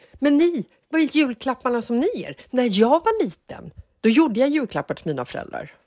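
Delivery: put-on high-pitched ranting, scolding tone. Retelling what someone kept saying while going at them, imitating a ranting scold. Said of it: "härja på dem och säger det så här".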